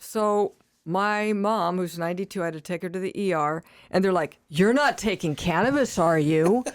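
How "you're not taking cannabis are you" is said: pointed, loaded, probing tone. Recalling taking a ninety-two-year-old mom to the ER, a speaker imitates the staff's tone. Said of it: "With that tone".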